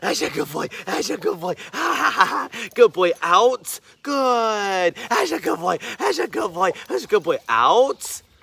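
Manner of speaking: hyped-up, excited, sing-song with big inflection. Showing how to get a picky dog going with a toy, excited praise voice. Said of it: "doing that voice inflection, getting excited about it".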